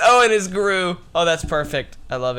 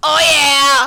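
put-on cartoon villain voice, higher and louder; 7 semitones higher, 5 dB louder than usual. Repeating the line after being told it sounded like Vector. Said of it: "You sounded like Vector when you said that".

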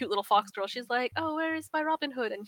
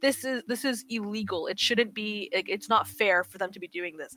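normal talking voice

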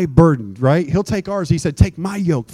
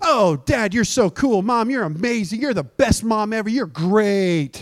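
put-on child sweet-talking voice, drawn-out "great"; 4 semitones higher than usual. Acting out a kid buttering up a parent: kid buttering up a parent. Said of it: "a kid coming to their parent going".

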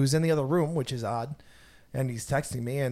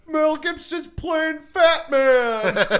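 put-on very high, very slow drawl, laughing through; 14 semitones higher, 7 dB louder than usual. Retelling a friend's reply: imitating Phil's stupid laugh. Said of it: "he does his stupid ass laugh".

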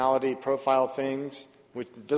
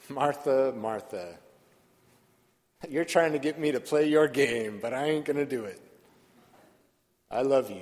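mock fond, compassionate, quick delivery through loving laughter. Voicing Jesus' words to Martha from the gospel: compassionate laughter. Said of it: "I hear Jesus' voice as compassionate laughter".

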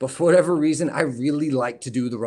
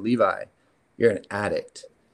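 put-on serious tone, slower; 4 semitones lower than usual. Retelling what his dad said to him, imitating dad's serious tone. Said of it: "the tone of his voice, like, he's about to say something serious".

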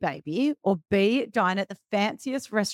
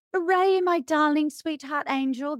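put-on sweet, high, cooing baby talk; 7 semitones higher than usual. Showing how they speak to him, in a baby voice. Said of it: "That's how I speak to him".

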